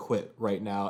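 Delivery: hushed half-whisper, close up. Retelling a wrestler threatening his pinned cousin: imitating a half-whisper. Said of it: "whispering in his face".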